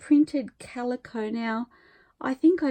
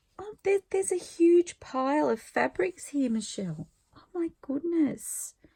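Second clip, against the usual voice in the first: overwhelmed, emotional, high-pitched exclaiming; 5 semitones higher than usual. Filming a video and speaking to michelle, emotional. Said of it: "I'm an emotional wreck".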